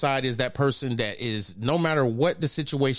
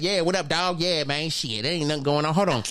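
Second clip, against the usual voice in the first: easygoing, casual street-style voice; 4 semitones higher than usual. Describing phone code-switching, imitating a homeboy calling: casual homeboy voice. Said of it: "homeboy call us like".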